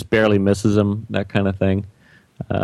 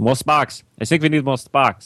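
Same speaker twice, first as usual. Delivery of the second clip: put-on typical Dutch accent, pitched higher; 5 semitones higher than usual. Quoting a t-shirt slogan from Jan: Jan's typical Dutch accent. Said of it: "typical Dutch accent".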